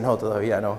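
calm, smiling, low and soft "no".

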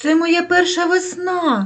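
sheepish, embarrassed voice. The little hare answers the snowdrop flower, embarrassed. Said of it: "зніяковіло зайченя".

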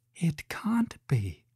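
hushed, breathed words on an outbreath. Facing a room of mirrors she has seen before, she breathes the words. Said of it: "she breathed".

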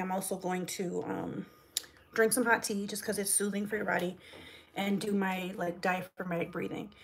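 ordinary delivery

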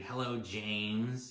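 put-on snooty, dismissive tone, one word drawn out. Retelling how she answered when called back: imitating a snotty tone. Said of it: "answers in a snotty attitude".

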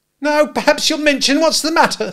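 breathless, very high, loud, shrill. The narrator's sister demands to know what's the matter, out of breath. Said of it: "out of breath".

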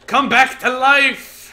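laughing, high-pitched shout.

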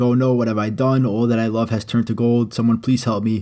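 normal talking voice

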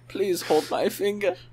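acted pitiful, small, begging, pleading voice. Acting out a scene, pleading with another person in a pitiful voice. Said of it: "A pitiful voice say".

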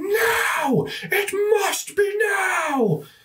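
shrill, ethereal, ghostly shriek, very high pitched. Narrating to the players, voicing an ethereal form in the window, shrieking. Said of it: "this ethereal form shrieks out".

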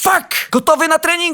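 loud, high-pitched exclaiming voice.

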